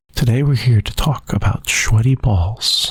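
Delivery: radio announcer voice. Doing an NPR impression when asked for one: NPR impression. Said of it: "your best N P R impression".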